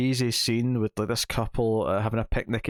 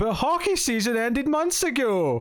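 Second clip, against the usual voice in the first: high, shocked yell, deadpan; 13 semitones higher than usual. Retelling a horror movie boyfriend's line to a serial killer: retelling a deadpan, shocked yell. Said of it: "completely deadpan and shocked, just yells out".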